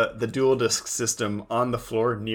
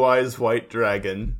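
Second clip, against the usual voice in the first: usual speaking voice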